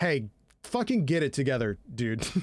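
encouraging, supportive, tough-love tone. Retelling how Bakugo urges Deku in a supportive way: imitating Bakugo, supportive. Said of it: "In, like, a, in, like, a supportive way".

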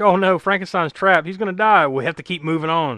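ordinary talk, nothing marked

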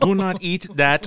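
very high, very slow put-on German accent. Joking about what would scare children: put-on German accent. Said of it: "the German voice saying".

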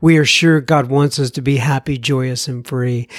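ordinary delivery

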